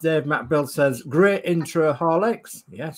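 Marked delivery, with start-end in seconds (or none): none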